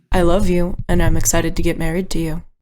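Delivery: quiet whispering. Voicing a character at a door, saying a vow: whispering. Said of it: "and whispers".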